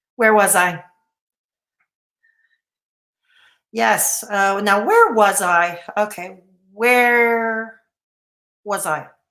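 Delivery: tired, nervous tone. Losing the thread while raising awareness of a condition, nervous and tired. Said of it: "I'm just so tired and I'm nervous".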